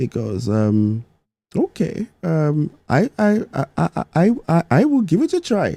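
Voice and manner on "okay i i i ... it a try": very high, swooping put-on Indian accent, tried hard. Retelling a story, voicing a man agreeing to give it a try: put-on indian accent. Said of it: "I'll try my best to do the Indian accent".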